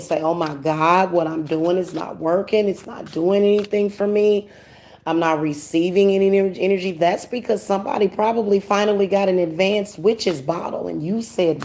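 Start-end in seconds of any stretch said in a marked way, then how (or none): none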